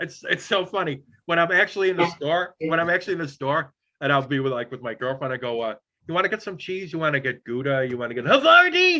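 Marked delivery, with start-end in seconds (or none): 6.1-9.0 put-on showman voice, swooping, sing-song tune all over. Retelling asking a girlfriend about cheese in the store: Jerry Lewis voice. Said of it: "I have to say it like Jerry Lewis".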